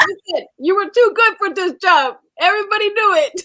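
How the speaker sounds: put-on slight Jamaican accent, very high. Retelling a guy friend's phone call, speaker quotes him in a light Jamaican accent. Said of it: "so he had a little Jamaican accent".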